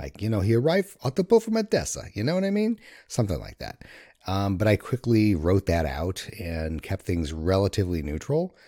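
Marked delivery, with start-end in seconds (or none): 0.4-2.8 very high, almost-Jersey tough-guy accent. Trying out an accent the speaker once thought of: tough jersey accent. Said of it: "almost Jersey tough kind of accent".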